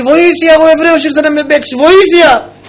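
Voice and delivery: loud shouting.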